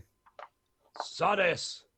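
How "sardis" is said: shouted loudly. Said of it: "Balthor started shouting".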